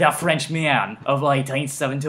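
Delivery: put-on Australian-sounding accent. Reading a line aloud from a passage: Australian accent. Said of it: "That's an Australian accent".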